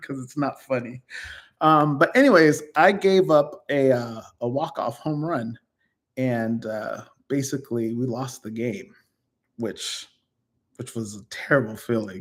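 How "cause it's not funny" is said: talking through laughter, quieter. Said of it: "I don't know why I'm laughing".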